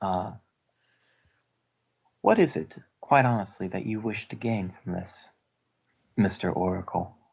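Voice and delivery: soft little banshee voice. Speaking over the comlink to the Oracle, a player asks in a soft little banshee voice. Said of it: "softly in my little um, banshee voice".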